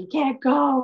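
high, put-on mother voice yelling out. Retelling what mom yelled just before the crash: imitating someone yelling. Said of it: "my mom, like, yelling".

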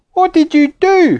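insistent, demanding tone, pitched very high. Squeaky confronts the apple fiend he shook out of the bag, demanding. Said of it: "He demanded".

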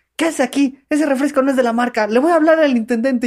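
acted-out high-pitched shouting and yelling. Retelling a woman at the soda machine grabbing the speaker's hand, retelling a scolding. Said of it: "me empezó a gritar".

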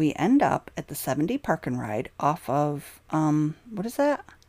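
plain

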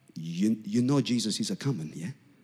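put-on Lebanese accent. Recalling the uncle's usual greeting to the speaker: Lebanese accent. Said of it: "in his Lebanese accent".

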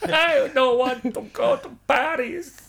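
very high, slow, drawn-out Argentine accent. Repeating a quoted line after being asked for it in Messi's accent. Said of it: "but in Messi's accent".

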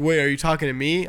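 ordinary delivery

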